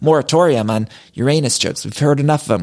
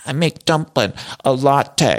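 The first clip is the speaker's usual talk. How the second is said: put-on slower acted baby talk. Speaker retelling what a man said to another man: Tom Sandoval baby voice. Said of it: "he's in the baby voice".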